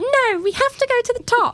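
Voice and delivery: put-on bratty, very high British child voice. Retelling what you said as a child to a scared companion, extra British child voice. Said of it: "I like your extra British child voice".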